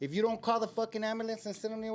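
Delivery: loud yell. Retelling how a friend yelled at the speaker: imitating someone yelling. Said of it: "he told me like this".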